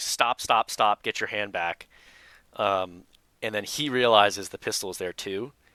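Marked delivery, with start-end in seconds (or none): 0.0-1.9 put-on repeated yelling. Retelling a traffic stop, yelling at a driver reaching for a pistol: retelling a yell at a driver. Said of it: "I immediately start yelling at him".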